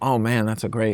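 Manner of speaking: ordinary delivery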